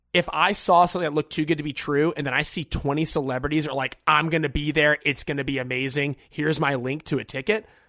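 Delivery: normal talking voice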